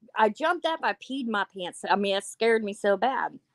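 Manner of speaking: usual speaking voice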